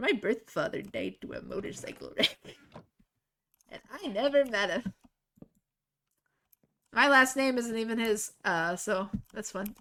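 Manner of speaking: giggling, laughing through the words. Sharing a fact with viewers, laughing while talking. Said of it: "I don't know why that makes me laugh".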